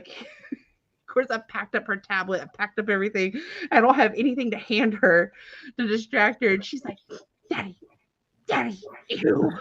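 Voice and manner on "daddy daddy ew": put-on over-the-top, dramatic little-kid toddler voice. A father retelling his toddler on a plane with nothing to distract her, imitating Chloe's toddler drama. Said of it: "Just so dramatic in her three and a half year old fashion".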